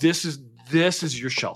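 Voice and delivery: put-on charming delivery. Retelling a film scene where he offers her a place: imitating a charming delivery. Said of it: "he just says it so charming".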